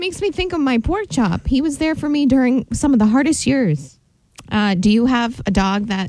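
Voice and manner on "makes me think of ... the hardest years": moved, emotional voice with raised pitch. Mid-speech, after admitting to feeling it, getting emotional. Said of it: "I'm getting emotional".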